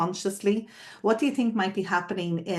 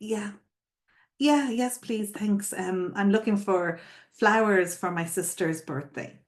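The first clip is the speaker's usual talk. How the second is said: mock unsure, hesitant, halting, stop-start delivery. Retelling a customer's reply to a shop worker offering help, imitating a hesitant customer. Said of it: "Emma hesitates and she says".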